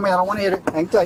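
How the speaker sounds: usual speaking voice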